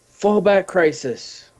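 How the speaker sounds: in-character, high-pitched calling voice. Player calling out in character during a game, yelling out. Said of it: "I yell out".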